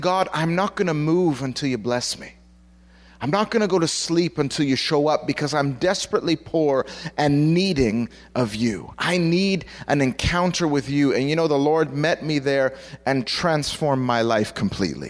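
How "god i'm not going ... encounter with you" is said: plain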